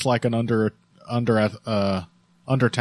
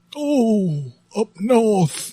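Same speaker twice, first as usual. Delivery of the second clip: put-on very high, loud old man voice, Yorkshire accent; 10 semitones higher, 5 dB louder than usual. Showing a co-host a go-to accent, old Yorkshire man accent. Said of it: "That's my Yorkshire, uh, old man from, from Doncaster accent".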